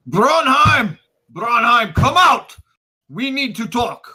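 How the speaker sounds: very high, loud, high-pitched angry shouting. Voicing a character storming through a house: shouting while storming through. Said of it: "storming through the house".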